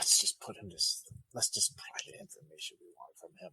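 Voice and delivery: soft, barely voiced whisper under the breath. Playing a character who turns and whispers to an ally: whispering. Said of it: "whisper to Pelham".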